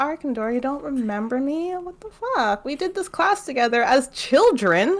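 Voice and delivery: wounded, indignant disbelief. Retelling a book scene, acting out a character's outrage: offended Link voice. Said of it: "Link gets all offended that Kanth doesn't remember them".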